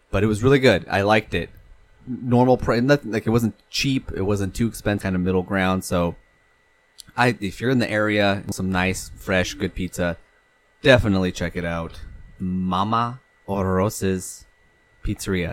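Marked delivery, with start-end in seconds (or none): 12.3-15.5 Spanish accent, with "Mama" stretched out. Recommending a local pizzeria by name, in a Spanish accent. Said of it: "Don't know why I said it with the Spanish accent".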